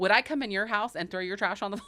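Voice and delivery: acted angry, brutally honest outburst. Retelling a restaurant owner's reaction to crumbs on the floor: imitating Richie losing his mind. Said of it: "Richie lost his mind".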